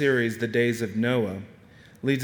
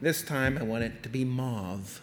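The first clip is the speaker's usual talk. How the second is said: soft put-on woman's voice; 5 dB quieter than usual. Describing a wife wanting the walls repainted, the speaker imitates a woman's voice. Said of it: "That was a woman's voice".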